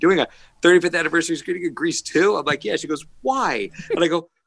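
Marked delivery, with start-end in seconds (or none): 0.0-2.4 play-acted words broken up by cracking-up laughter. Speaker quotes a woman who started cracking up, imitating someone cracking up. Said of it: "And she started cracking up".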